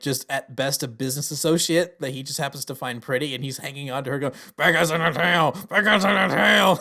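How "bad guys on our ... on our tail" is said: loud, forced out through gritted teeth. Retelling a movie scene where a character speeds through town: imitating Stanley Tucci through gritted teeth. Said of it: "He's doing it through gritted teeth".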